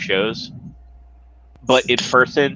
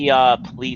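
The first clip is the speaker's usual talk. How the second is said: normal talking voice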